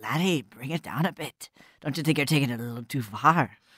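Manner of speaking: hushed, under-the-breath muttered aside. Voicing a wrestler pulling another close: under his breath. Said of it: "he's sort of under his breath is like".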